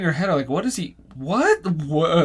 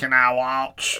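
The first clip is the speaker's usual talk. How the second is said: put-on low, slow, dragged-out drawling voice; 5 semitones lower than usual. In joking banter, a short line done as: Sling Blade voice. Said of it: "I don't know why I made it sound like Sling Blade".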